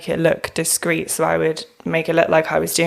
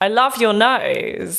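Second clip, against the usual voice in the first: mock sarcastic, mocking tone, higher pitch; 4 semitones higher than usual. Retelling what bullies said about a big nose: imitating a sarcastic taunt. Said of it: "they'd be really sarcastic".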